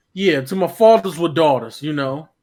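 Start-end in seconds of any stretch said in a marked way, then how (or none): 0.4-1.8 Harlem accent and delivery. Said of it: "Like a Harlem dude".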